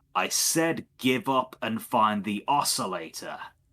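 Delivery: dragon-like voice, called out. Narrating a scene, voicing the draconic voice as it yells out again. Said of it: "draconic voice again uh, yell out".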